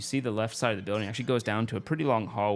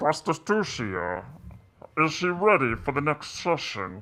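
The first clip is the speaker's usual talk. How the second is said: loud put-on villain voice, pitched higher; 5 semitones higher, 4 dB louder than usual. Voicing the pimp again, louder: loud Bane voice. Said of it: "Be real loud".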